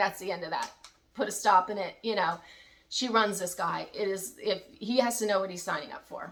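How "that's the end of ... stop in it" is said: plain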